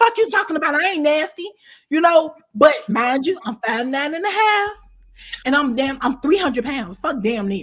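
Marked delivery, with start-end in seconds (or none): 0.0-1.5 confrontational, heated, loud comeback. Retelling a cellmate's retort in the common room: imitating someone getting loud. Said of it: "you're getting loud with me".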